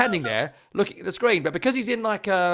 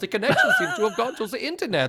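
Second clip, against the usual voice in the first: put-on European accent with swooping, swinging pitch; 4 semitones higher than usual. Retelling a manager's confusion at a cable problem: Daniel Farke impression. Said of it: "This is my best accent".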